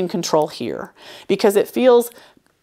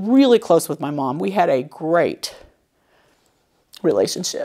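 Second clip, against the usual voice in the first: fighting tears, much slower pace. A speaker about to share something personal, holding back tears. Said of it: "I'm going to try to say this without crying".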